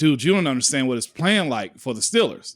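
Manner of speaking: ordinary talk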